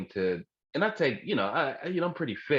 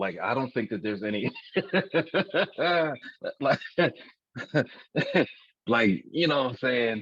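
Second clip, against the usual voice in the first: talking through the words with bursts of laughter. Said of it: "I'm sorry for laughing".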